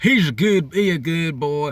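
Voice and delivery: badly faked, put-on Chicago accent. Quoting a woman defending her criminal husband, in a put-on chicago accent. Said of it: "He with the Chicago accent".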